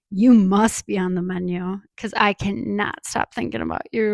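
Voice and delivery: put-on creepy man's voice. Retelling a customer's pickup line at the counter, mock-creepy pickup line. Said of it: "Like crazy eyes, just you know how creepy men do it".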